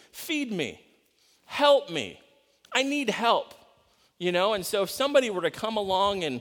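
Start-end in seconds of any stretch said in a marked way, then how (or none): 0.1-3.5 put-on very slow, drawn-out, high crying. Voicing a man nailed to a cross crying like babies, mock crying plea. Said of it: "he's crying like these babies are crying".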